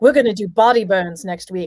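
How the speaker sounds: eager voice bubbling over with excitement. Retelling what a friend said about next week: imitating Beatrice excited. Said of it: "she was so excited".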